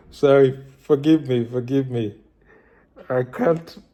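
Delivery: laughing while talking, cracking up. Apologizing at the start of a video, laughing while talking. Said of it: "I'm cracking up".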